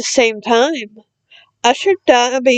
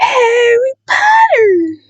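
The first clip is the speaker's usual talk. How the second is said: very high-pitched, squeaky little creature voice; 12 semitones higher, 3 dB louder than usual. Dobby answers a nervous hello, in a high-pitched Dobby voice. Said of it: "said the creature in a high-pitched voice".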